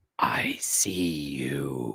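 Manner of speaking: very low demonic voice, "you" drawn out. Repeating a voice heard while walking with a coworker: demonic voice. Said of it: "in a clearly demonic voice, and I'm going to repeat this".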